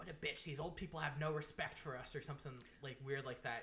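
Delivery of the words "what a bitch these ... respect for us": blunt, rude, loud acted-out remark. Retelling what a girl loudly said about an old lady in an aisle, retelling a loud remark. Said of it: "this girl like looked at me and loudly goes".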